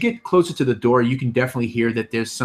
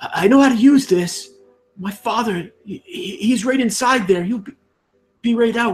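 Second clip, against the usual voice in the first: very high, trembling, shaky voice that cracks; 12 semitones higher than usual. Voicing a kid character in a role-play scene, in a shaky voice that cracks. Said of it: "he says in a, in a shaky voice um, that cracks a bit".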